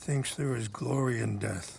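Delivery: plain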